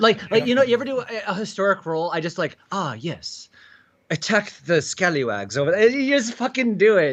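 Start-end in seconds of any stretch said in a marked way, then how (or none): 2.7-5.9 fake posh British nobility accent. Showing how everyone slips into british in a historic role, fake english accent. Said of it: "fake English accent when they do British one".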